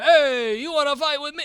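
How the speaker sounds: failed put-on Italian accent. Joking about looks, trying a put-on tough line: failed attempt at Italian accent. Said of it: "That wasn't Italian".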